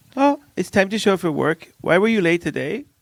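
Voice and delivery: put-on Swedish accent. Explaining to another speaker how work talk goes in Sweden, mock Swedish accent. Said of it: "That's my Swedish accent".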